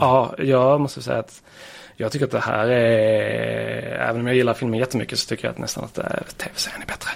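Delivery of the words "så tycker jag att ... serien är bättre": rushed, quick, hushed whisper. Discussing a TV series adaptation with a co-host, whispering. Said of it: "viskar fram det".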